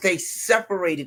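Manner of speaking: normal talking voice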